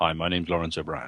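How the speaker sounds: formal, low, serious phone voice. Describing how people sound on calls with strangers: serious phone voice. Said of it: "that sort of serious phone voice".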